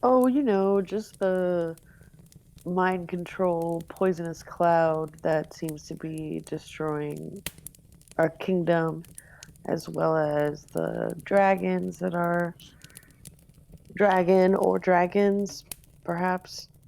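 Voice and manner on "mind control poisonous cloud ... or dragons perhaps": slow, offhand nonchalance. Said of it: "I just love how you say it ... so nonchalantly".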